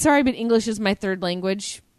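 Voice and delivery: ordinary talk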